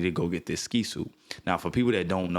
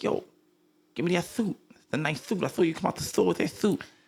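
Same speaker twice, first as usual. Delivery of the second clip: very high-pitched demanding voice; 11 semitones higher than usual. Retelling a robbery, imitating Mike Tyson's high-pitched voice. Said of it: "High-pitched voice".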